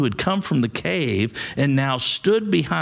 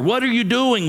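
anxious, nervous, pitched-up cry; 9 semitones higher than usual. One of the cave people calls out to a silent stranger, crying out nervously. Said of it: "one cried nervously".

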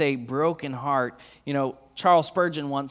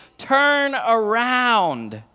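high, urgent shout with "around" drawn out; 8 semitones higher, 6 dB louder than usual. Retelling shouting to a sister playing soccer: imitating shouting. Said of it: "we started shouting".

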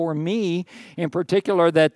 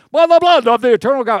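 very loud, booming preacher voice; 8 semitones higher, 8 dB louder than usual. Rereading a scripture benediction line more grandly: preacher voice. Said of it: "I gotta get my preacher voice on for that".

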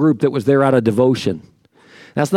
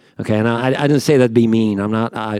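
ordinary talk

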